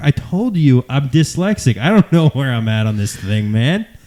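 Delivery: put-on dazed, completely stoned, out-of-it voice. Retelling a prank call to the others: imitating a stoned caller. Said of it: "acting like he's basically high the whole time".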